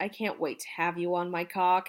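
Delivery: ordinary delivery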